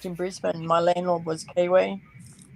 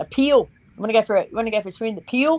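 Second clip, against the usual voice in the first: clumsy put-on New Zealand accent, pool said as peel; 4 semitones higher, 4 dB louder than usual. Speaker mimics how Kiwis say pool; bad Kiwi accent. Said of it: "I do not do a really good Kiwi accent".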